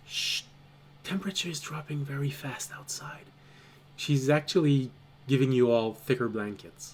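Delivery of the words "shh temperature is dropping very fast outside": soft, hushed shushing. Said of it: "she just goes".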